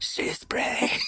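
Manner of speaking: put-on eerie whisper. Recalling trying to reassure their parents, retelling a creepy whisper. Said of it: "in a creepy whisper".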